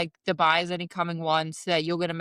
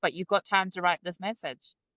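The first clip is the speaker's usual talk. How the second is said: ordinary delivery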